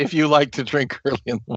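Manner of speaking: fast, mocking delivery while laughing.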